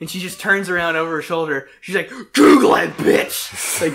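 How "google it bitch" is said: full-volume, super loud, booming shouted yell. Retelling how a grandma answered a son's question, imitating a super loud shout. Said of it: "super loud".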